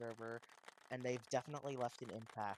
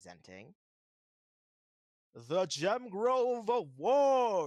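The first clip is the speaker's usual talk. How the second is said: very loud, very drawn-out, slow put-on announcer voice; 7 semitones higher, 14 dB louder than usual. Presenting an award during a talk, in a put-on announcer voice. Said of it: "I had to do the voice".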